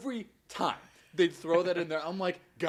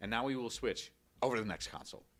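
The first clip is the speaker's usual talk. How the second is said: put-on flat deadpan presenter-style delivery; 4 semitones lower, 6 dB quieter than usual. Mocking livestream presenters switching consoles, imitating a deadpan delivery. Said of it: "they had this sort of like deadpan".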